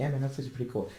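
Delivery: unexcited, casual voice. Show host showing how the hosts talk once they stop, lowered voice. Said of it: "but then we lower our voice".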